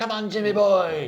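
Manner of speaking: very high, loud, crazed, drawn-out maniacal jeer. Retelling a chase scene where a character taunts: imitating a maniacal taunt. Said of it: "the most maniacal laugh".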